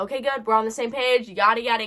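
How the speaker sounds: plain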